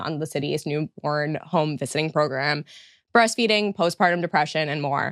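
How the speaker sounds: normal talking voice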